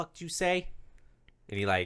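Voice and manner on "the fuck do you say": menacing, threatening voice, pitched up. Voicing a guard at the bars who threatens a prisoner: threatening guard voice. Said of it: "this guy comes up to you and he's like".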